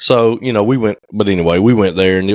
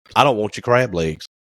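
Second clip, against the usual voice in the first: ordinary delivery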